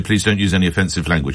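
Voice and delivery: ordinary delivery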